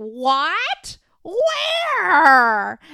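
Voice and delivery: very loud, high, swooping, bewildered, drawn-out "where". Imitating a partner reacting loudly to a hint: imitating someone asking loudly. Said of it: "Like, really loud".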